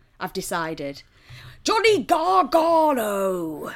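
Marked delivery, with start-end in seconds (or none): 1.7-3.7 high, loud put-on English accent, drawn out. Mocking a wrestler's accent: Wade Barrett impression. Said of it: "Wade Barrett sounds like if when an American does an impression of an English person".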